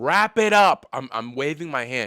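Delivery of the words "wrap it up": shrill, very high, loud yelled shout. Retelling screaming at a DJ from a rooftop: imitating own scream. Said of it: "I scream down to the D J".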